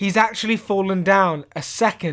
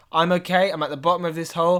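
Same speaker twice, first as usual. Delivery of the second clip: ordinary talk, nothing marked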